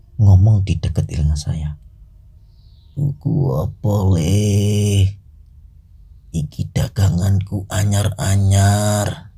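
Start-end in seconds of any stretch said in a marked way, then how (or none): 3.0-9.2 put-on slow, very raspy, hoarse, rasping old-man voice. Retelling an eerie encounter, voicing a voice close to his ear, very raspy old-man voice. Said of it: "suara kakek-kakek, serak banget".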